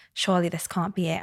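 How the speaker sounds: ordinary delivery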